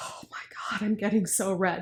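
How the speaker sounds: shocked, breathy whispered gasp.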